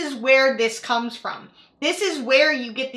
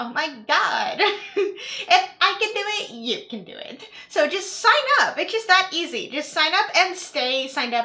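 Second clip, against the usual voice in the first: put-on higher-pitched valley girl delivery; 5 semitones higher than usual. Describing the voices they use, doing a valley girl voice. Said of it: "or I'll do like Valley Girl".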